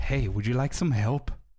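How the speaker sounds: put-on creepy close breathing. Retelling a shop visit, imitating a creepy clerk breathing in your ear. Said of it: "a creep coming in close to you, breathing on your ear like".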